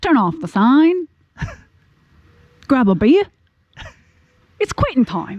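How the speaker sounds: improvised Outback character voice. Asked by the other host to improvise the Australian Outback intro; Australian Outback intro voice. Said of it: "the Australian Outback intro".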